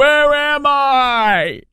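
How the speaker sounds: very high, shrill, stretched-out shout, "I" drawn out. Mocking the president getting lost in a church: mock yelling. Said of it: "Now I'm yelling".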